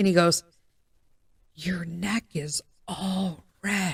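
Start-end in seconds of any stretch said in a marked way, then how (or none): 1.5-4.0 slow, hushed, barely audible half-whisper. Retelling what someone across the desk half-whispered during a call: imitating someone half-whispering. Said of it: "he's whispering".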